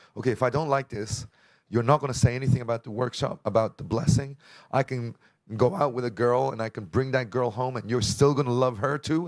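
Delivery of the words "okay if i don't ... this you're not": plain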